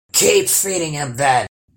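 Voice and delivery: grunting. Narrator reads a troll answering his daughter: grunted. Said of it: "grunted the troll".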